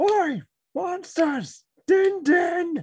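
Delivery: very loud, high, stretched-out calling voice. Luring the creatures into the traps in the game: calling out loudly. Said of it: "I guess I just call out".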